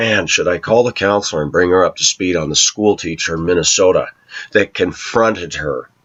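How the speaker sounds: plain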